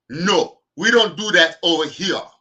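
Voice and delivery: very high, very loud, belted-out voice. Reacting to a chat message in a T'Challa voice. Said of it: "in my T'Challa voice".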